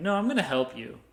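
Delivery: normal talking voice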